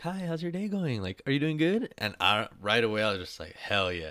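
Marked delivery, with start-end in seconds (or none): 0.0-1.9 friendly, cheery, very high-pitched voice. Retelling a man greeting them with the biggest smile: imitating his high-pitched voice. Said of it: "It was higher pitch, and he had the biggest smile".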